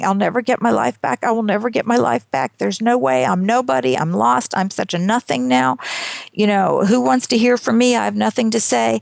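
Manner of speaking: acted-out tearful, despairing, self-pitying crying. Retelling own past despairing words, imitating own past sobbing. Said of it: "just crying, saying".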